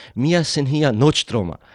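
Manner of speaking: plain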